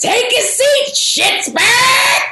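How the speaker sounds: very high, drawn-out, full-throated man's yell. Retelling a friend jumping to his feet after a score, imitating Bill's full-throated scream. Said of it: "screams out in a full-throated man voice".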